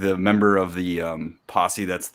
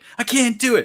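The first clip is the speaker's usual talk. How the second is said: high-pitched, loud, emotional whining. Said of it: "gonna get emotional and be like".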